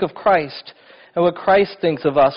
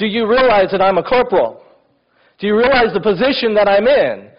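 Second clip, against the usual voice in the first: mock affronted, indignant voice, pitched up; 5 semitones higher, 4 dB louder than usual. Retelling a corporal's reply when asked why he wasn't helping: mock-indignant. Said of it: "indignantly, he goes".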